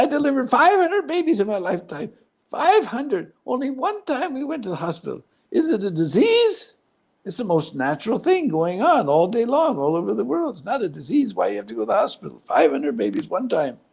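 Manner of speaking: squeaky, high voice with big pitch swings. Retelling what the doctor who delivered the baby said: imitating a squeaky voice. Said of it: "and he had squeaky voice".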